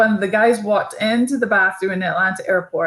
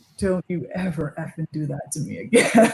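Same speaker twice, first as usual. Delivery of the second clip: very calm, menacing half-whisper close in the ear; 3 semitones lower, 4 dB quieter than usual. Retelling a coach's words into someone's ear: imitating a calm half-whispered threat. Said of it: "very calmly to his ear".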